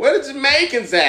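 put-on New York comic voice. Imitating local comics climbing on stage: imitating a New York urban comic on stage. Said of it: "them cats that climb on stage".

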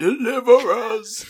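very high, very loud, shrill, belted exclamation. Comparing an actor's film voice to Aunt May: Aunt May voice. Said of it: "he sounds like Aunt May in the first Spider-Man movie when she's like".

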